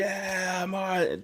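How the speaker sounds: high, excited, triumphant put-on cheer. Retelling a rival fan turning around: imitating someone cheering. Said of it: "starts cheering".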